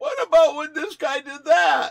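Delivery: high, loud, angry yell.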